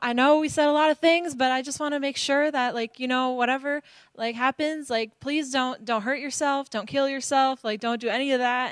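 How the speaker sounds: play-acted tearful pleading, crying through sobs. Retelling a phone call from a woman who called back, imitating her sobbing. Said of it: "she's like sobbing".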